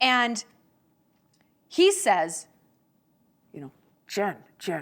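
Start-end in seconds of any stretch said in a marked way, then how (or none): 4.1-4.8 odd, weird voice crowding right up on the microphone. Retelling a talk with Howard Stern, calling Jen in Howard Stern's weird voice. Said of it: "in his weird voice".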